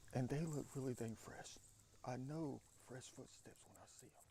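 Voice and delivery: hushed, very quiet whisper. Pointing out fresh footsteps outdoors, trying not to be heard: whispering. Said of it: "I'm trying to whisper".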